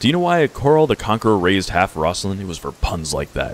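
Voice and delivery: ordinary talk, nothing marked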